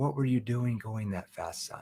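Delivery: worried, concerned, caring voice. Demonstrating a tone shift, asking a son about speeding: worried, caring tone. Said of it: "what if I shifted my tone into more of a concern tone?".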